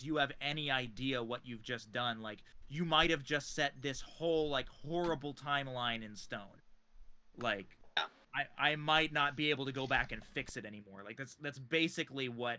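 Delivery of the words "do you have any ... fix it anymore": plain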